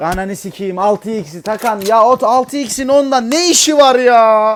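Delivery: furious, very loud yell rising in pitch. Gamer loses his temper during a match: angry shouting. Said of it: "Bağırma lan milletin içinde!".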